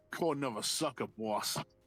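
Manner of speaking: put-on Boston accent. Reading a role after being asked to try it: Boston accent. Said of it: "can you give him a Boston?".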